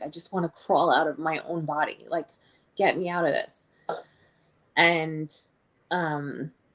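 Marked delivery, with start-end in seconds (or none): none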